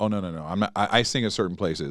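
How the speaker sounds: ordinary delivery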